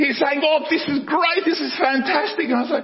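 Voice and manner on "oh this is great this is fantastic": thrilled, excited, gushing delight. Retelling being caught in a storm while driving: imitating excited Zach. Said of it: "he's just excited".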